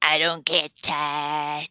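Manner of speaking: put-on slurred slow drawl. Showing the way he says it, with his weird slur: slurred Benny impression. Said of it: "the whole weird slur that he says it with".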